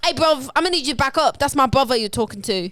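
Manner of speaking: loud, threatening, laid-on tough Cockney accent. Continuing the Cockney bit, telling someone to back up: put-on intimidating Cockney accent. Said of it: "It feels like you're trying to fight me".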